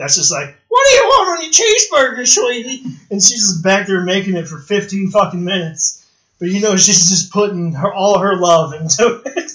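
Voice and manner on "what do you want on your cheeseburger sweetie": very high, loud, shrill put-on country old-lady voice. Describing the cook at a bowling alley in North Carolina: imitating a country old lady. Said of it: "country old lady that's back there".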